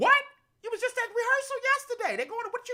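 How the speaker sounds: high, fast, blurted stunned disbelief. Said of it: "You had to be like".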